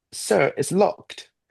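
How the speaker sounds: put-on very high-pitched British accent. Retelling a moment getting out of a taxi, British accent. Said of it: "I did have a British accent in one moment".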